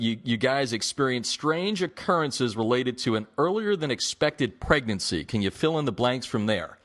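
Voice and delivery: ordinary talk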